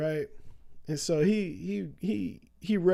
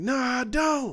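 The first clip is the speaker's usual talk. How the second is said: high, heated, worked-up put-on shout, flat; 6 semitones higher than usual. Retelling the other driver denying having insurance, imitating someone yelling. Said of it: "And he's yelling".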